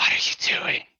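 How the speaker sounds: hushed, whispering small reptile creature voice. Game master voicing a small reptilian creature grabbing a player's hand, whispering reptilian creature. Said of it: "and you hear it whisper".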